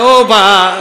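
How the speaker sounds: loud, high-pitched calling out.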